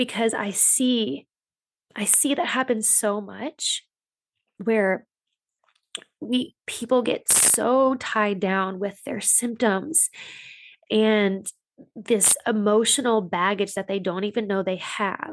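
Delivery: slow, choked-up, emotional delivery. Describing a client's struggle, getting emotional. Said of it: "I'm getting emotional talking about it".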